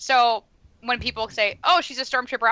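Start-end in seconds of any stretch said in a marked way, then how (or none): none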